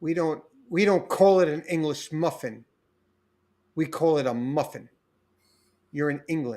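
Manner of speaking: mock bone-dry, deadpan, no-joke delivery. Retelling what a lady in England told the speaker, imitating a deadpan delivery. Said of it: "with a dead straight face".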